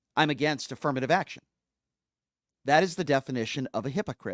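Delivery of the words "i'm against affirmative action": plain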